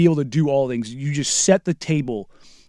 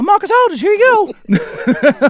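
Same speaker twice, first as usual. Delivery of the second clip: very high, squeaky cartoon-mouse voice. Retelling what Andre called out during a play, imitating Andre's super high voice. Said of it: "sounds like Mickey Mouse".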